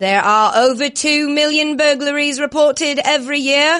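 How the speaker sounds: British football play-by-play announcer voice. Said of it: "as if you were the play-by-play announcer at a soccer slash football".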